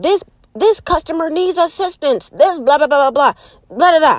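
high, robotic, machine-like yell calling out. Describing self-checkout lines: imitating checkout robot yelling. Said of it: "when they be like yelling".

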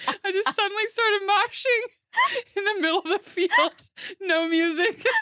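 tearful crying, very high and loud. Telling a story while the listener points out she's crying, crying. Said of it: "you're crying also".

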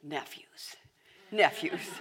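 loud, mumbled, repeated muttering. Speaker recalls Uncle Clint taking the nephews downstairs: imitating Uncle Clint mumbling. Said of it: "he'd be mumbling".

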